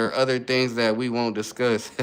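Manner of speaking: ordinary delivery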